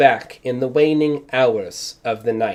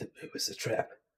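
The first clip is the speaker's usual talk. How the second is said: muttering under breath, much quieter. At the game table, Atreus reacts after the trap: muttering under his breath. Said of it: "Atreus is just muttering under his breath".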